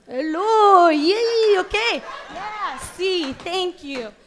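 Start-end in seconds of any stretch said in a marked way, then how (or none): 0.2-2.1 comic Iranian accent. Performer takes accent requests from the audience and does an Iranian accent.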